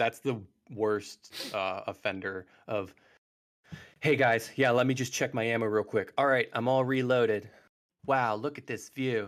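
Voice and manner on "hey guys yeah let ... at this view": awkward, cringy, forced play-by-play narrating. Mocking the scripted commentary from a game preview: imitating cringy forced gameplay narration. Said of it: "the most cringy, forced, like, game, uh, narrating".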